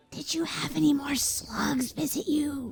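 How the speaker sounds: soft, hushed, secretive whisper. Retelling a girl's question to Laura, whispering. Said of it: "like whispering".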